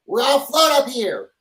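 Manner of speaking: piping announcer voice. Retelling what a pilot said over the intercom, in a high-pitched voice. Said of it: "in a high pitched voice".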